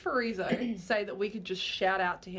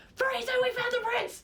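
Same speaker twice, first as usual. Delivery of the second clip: frantic, very high, hurried, rushed yell; 4 dB louder than usual. Playing a character calling out that they found the prince: frantic yell. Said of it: "It's really frantically".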